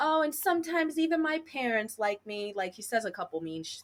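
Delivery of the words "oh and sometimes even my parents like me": high, taunting, mocking mimicry voice. Retelling a scene where a character mocks a girl: imitating JT's mocking voice. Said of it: "mocking voice of her".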